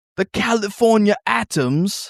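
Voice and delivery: horrible put-on British accent. Joking with co-hosts about how British people say atoms, horrible British accent. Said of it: "That was a horrible British accent".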